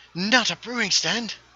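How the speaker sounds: very high-pitched put-on English accent. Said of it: "better as an English accent".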